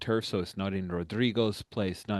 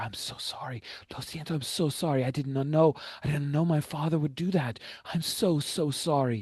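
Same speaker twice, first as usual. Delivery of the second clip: fervent stage whisper, pitched up; 7 semitones higher than usual. A woman hugs the listener close, speaking into their ear: fervent half-whisper. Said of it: "she whispers fervently into your ear".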